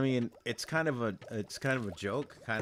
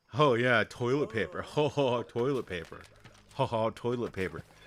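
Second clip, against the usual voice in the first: mock jeering, scornful tone with ho ho chuckles; 4 dB louder than usual. Imitating people throwing the phrase back at you, in a mocking manner. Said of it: "say it in a mocking manner".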